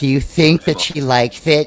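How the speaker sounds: put-on mean voice.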